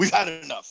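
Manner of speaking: ordinary talk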